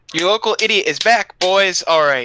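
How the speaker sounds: very loud yelling at full volume. Just unmuted on a group call, a participant greets everyone, yelling. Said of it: "sorry, I was yelling".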